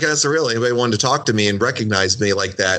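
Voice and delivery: ordinary talk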